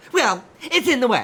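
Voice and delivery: very high, very loud, shrill taunting mock copy of voice. Retelling a store argument, answering a stranger: mocking imitation of her voice. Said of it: "I could not help but mimic her mockingly".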